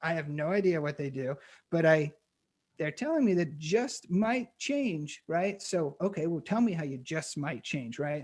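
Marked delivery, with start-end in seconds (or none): 6.0-8.0 prodding, know-it-all smart-aleck tone. Reacting to a marketing slogan, acting as a smart-ass investor. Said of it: "I'm talking like a smart ass investor here".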